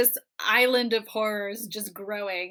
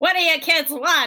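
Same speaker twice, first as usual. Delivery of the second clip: put-on old-time New York mobster voice; 6 semitones higher, 6 dB louder than usual. Imagining how a robot character talks: 1920s New York gangster voice. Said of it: "speaking like a nineteen twenties New York gangster".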